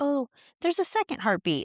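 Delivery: high, offhand nonchalant voice.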